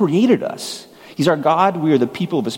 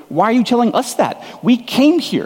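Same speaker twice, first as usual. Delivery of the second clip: exasperated, fed-up delivery. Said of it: "you might be thinking".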